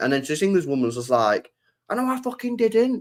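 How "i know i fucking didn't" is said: mock, very high-pitched, steaming, furious tone. Retelling how the accused woman denied it: imitating an angry denial. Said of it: "They're both steaming".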